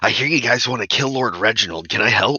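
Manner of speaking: put-on husky teen girl voice, words blurted out. A teenage girl slides into the booth offering help, husky voice, a bit too loud. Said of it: "a husky voice and a lit pipe".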